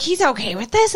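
mock sudden, alarmed freaking-out tone. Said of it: "she just starts freaking out".

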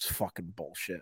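mock-angry muttering. Retelling a drunk guy staring into the fire; retelling an angry mutter. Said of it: "you just hear him under his breath just go".

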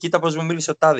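normal talking voice

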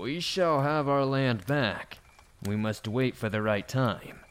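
mechanical, machine-like, almost robotic voice. Narrator reading a character who finally speaks up in the woods, almost robotic voice. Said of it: "said in an almost robotic voice".

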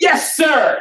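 very high reflexive shout, acted out. Recalling answering a man shouting at the top of his lungs, retelling a yell. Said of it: "Instinctively, I yell".

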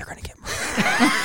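soft, hushed, under-the-breath whisper. Retelling hearing a kid ask for help, in an Oprah whisper. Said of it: "my Oprah whisper is like".

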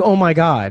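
acted-out aghast, horrified voice on the edge of tears. Retelling a show character's reaction after a gun misfires: imitating Ginny in horror, near tears. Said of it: "in horror, just in tears".

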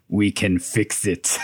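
low, slow character voice.

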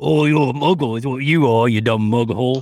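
put-on nasty, mean British bloke's accent. Mocking the word muggle, the speaker imitates a mean British guy. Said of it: "It sounds like some mean British guy".

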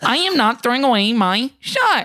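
high, cartoonish, puppet-like voice. Mimicking the national tour's Hamilton actor, a Muppet doing Lin-Manuel impression. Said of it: "did sound like a Muppet doing a Lin-Manuel impression".

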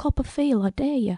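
voice dropped really low, under the breath. Speaker describes what she'll say to her, in a really low voice. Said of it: "in a really low voice".

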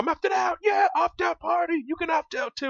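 very high, loud, booming bellow. Retelling a man opting out of the airport security scanner, imitating a loud bellowing voice. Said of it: "he just gets this loud, bellowing voice".

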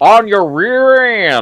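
very high Texas drawl on "rear". Quoting Bond's line from the movie: Bond's Texas accent. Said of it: "he just did like a Texas accent".

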